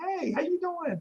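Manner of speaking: bright, cheerful tone.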